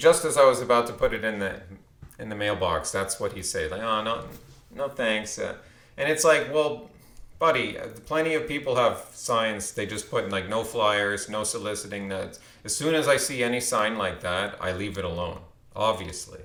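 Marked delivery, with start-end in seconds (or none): none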